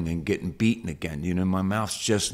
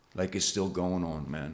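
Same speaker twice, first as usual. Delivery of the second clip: normal talking voice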